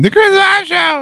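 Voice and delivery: mock very high, loud, crazed fan scream.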